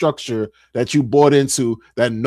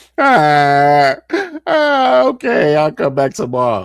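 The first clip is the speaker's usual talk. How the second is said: mock crying voice, long drawn-out ah, swooping pitch. Retelling their own reply to her after starting to cry, imitating own past crying. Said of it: "And then I start crying".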